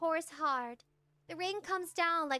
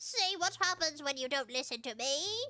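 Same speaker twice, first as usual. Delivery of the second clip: snide, told-you-so granny voice. Reading a story aloud, voicing the grandmother's snide remark: granny voice. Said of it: "That's my granny voice".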